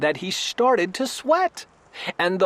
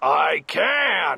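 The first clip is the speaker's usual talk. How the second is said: growling bear voice, dragging out "can"; 3 semitones lower than usual. Reading a story aloud, the bear answers the rabbit, growling bear. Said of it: "growled the bear".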